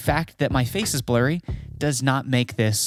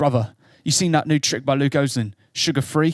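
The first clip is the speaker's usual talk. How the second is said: poorly done put-on British accent. Showing how a british person might say a trick's name: failed attempt at british accent. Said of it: "I don't know what accent that is. It's not British".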